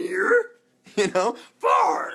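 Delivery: put-on high, slow, loud, croaky, stretched-out kid's voice. A video host talking to viewers does a near-and-far bit in a Grover kid's voice. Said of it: "It's so not like me to do like a kid's voice".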